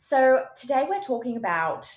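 put-on loud, high, belted-out English accent. Showing how a video intro would sound, in a Hermione Granger English accent. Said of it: "modified your accent from Australian to English".

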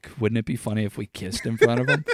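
quick, fast, conspiratorial plotting aside. Recalling a double date, suggesting a joke to his friend behind their dates, imitating a conspiratorial tone. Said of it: "said in a conspiratorial tone".

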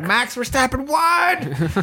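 acted, shrill, swooping excited screech, drawn-out "what". Recounting screaming early in the morning as the race ended, retelling excited screaming. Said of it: "I'm screaming".

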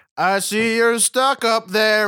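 acted-out, corny, would-be charming movie-charmer delivery. Mocking how a charming movie character talks: mocking cheesy charming movie dialogue. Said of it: "that dumb way supposedly charming people act in movies".

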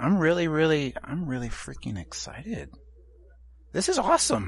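cracking voice. Speaking to the person he's been questioning, voice cracking. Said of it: "my voice cracked like a 16-year-old peripubescent boy there".

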